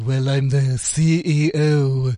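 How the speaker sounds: very slow voice, every word stretched out. Answering a question about his job: Mister Burns voice. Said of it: "Mister Burns?".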